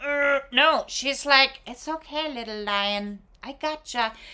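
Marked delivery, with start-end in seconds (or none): 1.7-4.1 gentle, soft, soothing, reassuring, nurturing voice. Voicing the woman on the card calming a lion: voicing a nurturing woman. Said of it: "She is strong in her nurturance".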